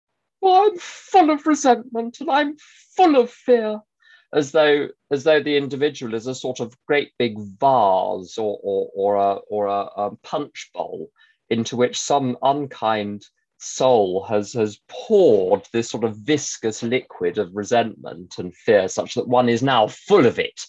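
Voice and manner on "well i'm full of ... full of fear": high, loud plaintive whine. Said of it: "very plaintively saying".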